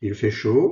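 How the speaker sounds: loud rising, questioning intonation on "chaud".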